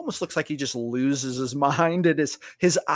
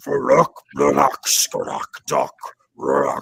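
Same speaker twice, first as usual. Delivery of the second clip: very slow, creaky, rough, drawn-out booming bellow; 5 dB louder than usual. Retelling a game moment, the speaker does a voice shouting from the north, a booming shout. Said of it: "a booming voice come from the north, and it kind of shouts".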